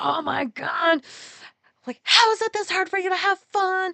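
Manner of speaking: put-on frustrated outburst. Retelling a meltdown in the car with a spouse: retelling own meltdown outburst. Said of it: "I just spiraled".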